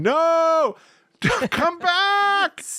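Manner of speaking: acted-out high scream. Retelling how they reacted while watching a DVD: retelling a scream. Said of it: "I was just screaming".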